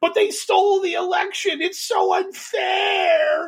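mock very high whining like a baby. Mocking Jordan Sather's complaint about losing the election; mock whining like a baby. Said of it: "whined like a baby".

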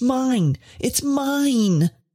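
high furious cry with "mine" drawn out. An old man accuses a woman of stealing from him, crying out in wrath. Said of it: "he cried".

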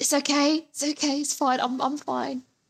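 whispered voice. During an arena fight scene, reassuring the other fighter while the crowd cheers, whispering. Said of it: "while whispering".

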